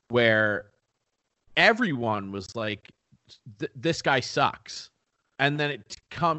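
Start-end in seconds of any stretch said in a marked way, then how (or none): none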